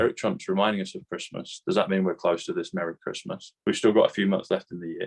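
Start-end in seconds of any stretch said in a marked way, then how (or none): none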